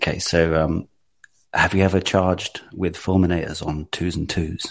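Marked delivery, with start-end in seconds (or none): 1.5-4.7 deep, seductive voice sunk a full octave. Delivering a line the others want used on a first date, voice dropped an octave. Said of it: "you went down an octave as well".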